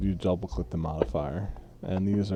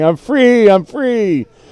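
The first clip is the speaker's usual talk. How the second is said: put-on very high, drawn-out, frightened childlike shriek; 14 semitones higher, 18 dB louder than usual. Voicing a freed prisoner running off with hands up, screaming like a scared child.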